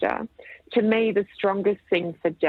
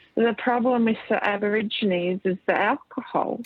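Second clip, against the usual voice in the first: put-on, very drunk, heavily slurred, words sliding together; 5 semitones higher than usual. Retelling what a drunk magistrate said at a convention: imitating a slurred drunk voice. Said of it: "said to me in a very slurred voice".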